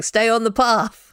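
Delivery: really loud, slow, booming voice.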